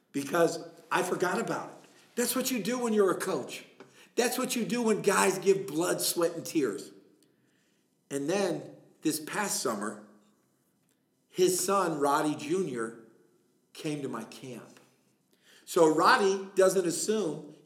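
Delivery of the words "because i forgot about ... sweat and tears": tearful, choked up, voice catching, struggling out. A coach recalls his commitment to someone he promised to be there for; choked up, teary. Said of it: "I'm getting teary-eyed right now and choked up".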